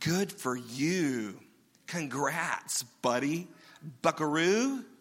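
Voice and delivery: very slow, dragging, sarcastic tone. Imitating how people sometimes talk to others: imitating sarcastic congratulation. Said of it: "That's sarcastic".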